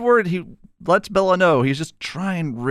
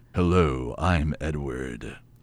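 very low, deep put-on voice; 6 dB quieter than usual. Imitating Edward, asking if this is the expected voice: deep voice imitating Edward. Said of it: "that deep".

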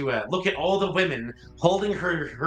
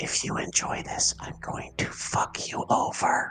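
acted-out, put-on whisper. Retelling a scene where she whispers to someone, retelling a whisper. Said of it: "You hear her whisper to Cheech".

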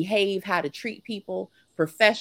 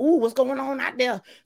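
mock frightened, wary, high-pitched voice; 5 semitones higher than usual. Retelling own reaction to hearing a shout: imitating being scared. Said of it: "I was turned on and scared".

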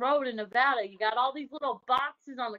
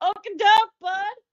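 very loud, very high, put-on Wisconsin accent; 9 semitones higher, 9 dB louder than usual. Asking someone about whipping out the accent in the middle of sex, demonstrate a put-on Wisconsin accent. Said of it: "whipped out your little Wisconsin accent, like".

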